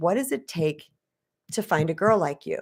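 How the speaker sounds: put-on mock nonchalant, casual tone. Retelling what a man asked her over coffee on date three, mock-nonchalant. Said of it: "He said real nonchalantly".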